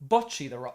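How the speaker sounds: loud put-on British pronunciation. Imitating the other speaker's pronunciation of a title: imitating a British accent. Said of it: "let me take my British accent".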